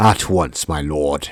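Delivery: very slow, deliberate, deep put-on character voice. As the prosecutor answering the judge in a courtroom scene, deep character voice. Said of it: "I wonder if that voice is good or if I should go deeper".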